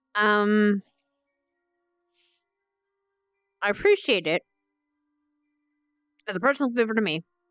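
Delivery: speaking while chewing, mouth full of food. Eating chips while talking, the speaker says this while talking with mouth full. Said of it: "Sorry, I'm just still chewing".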